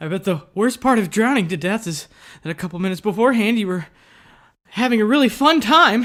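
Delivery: paranoid, uneasy, dread-filled musing voice. Reading a drawn game card in the assigned style: paranoid voice.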